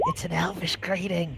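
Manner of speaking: quiet whispered aside. Leaning over the table to another character, she speaks: whispering. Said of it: "over and whispers to Kirak".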